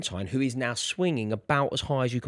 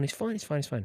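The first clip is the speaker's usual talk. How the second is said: mock unbothered, easygoing, cool, calm reassuring tone. Retelling a panicking grandmother at the swing, the speaker quotes their own cool reply. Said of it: "I've gone really cool".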